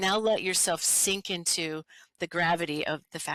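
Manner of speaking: normal talking voice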